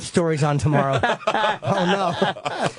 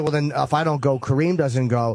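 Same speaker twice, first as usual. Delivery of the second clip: normal talking voice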